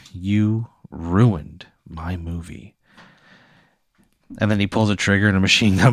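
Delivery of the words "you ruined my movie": calm, cold, slow, drawn-out, dead calm voice. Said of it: "He's just calm and cold".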